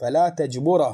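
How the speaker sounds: normal talking voice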